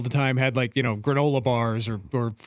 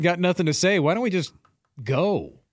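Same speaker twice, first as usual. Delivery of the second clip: usual speaking voice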